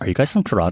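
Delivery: put-on sassy, blunt delivery. Insisting that the stranger spoke exactly so: sassy imitation of Charlie. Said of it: "Is that what I sound like? Like, so sassy".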